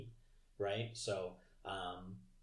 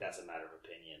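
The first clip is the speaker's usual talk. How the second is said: put-on icy cold voice, lower and quieter; 3 semitones lower, 5 dB quieter than usual. Retelling a captain's reply to a cheerful greeting: icy cold, imitating Janeway. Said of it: "it's just icy cold".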